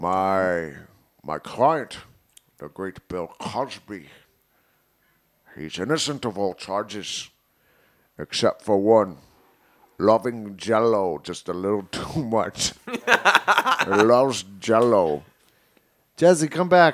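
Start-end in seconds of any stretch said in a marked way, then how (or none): 0.0-15.2 put-on Scottish actor voice, lower. Doing a voice on request as a defense lawyer addressing the jury: Sean Connery voice. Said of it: "give us your best, um, Sean Connery".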